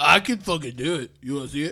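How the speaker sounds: mock drunk-man voice with a lisp. Retelling a story about a man in a bar, imitating a drunk man. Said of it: "He's drunk".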